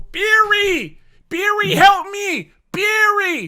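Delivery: very high, very slow calling out. Retelling how Jill calls Barry in the original game: imitating Jill calling Barry. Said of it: "she would just go".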